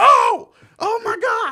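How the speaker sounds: shrill, very loud, high, long drawn-out scream. Retelling seeing the score change at work: imitating own scream. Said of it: "I screamed at work".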